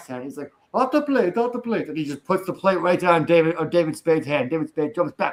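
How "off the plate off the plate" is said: high, exaggerated, over-the-top Italian accent. Retelling a movie scene where a waiter comes in; over-the-top Italian accent. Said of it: "the over the top Italian accent".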